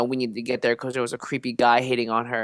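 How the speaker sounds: ordinary talk, nothing marked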